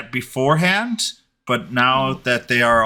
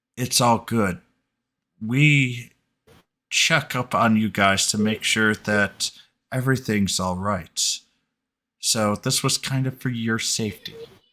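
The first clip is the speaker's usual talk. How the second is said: soft, hushed, secretive stage half-whisper; 3 dB quieter than usual. Voicing Bertram, caught out, reassuring the players: half-whispering. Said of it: "he whispers to you".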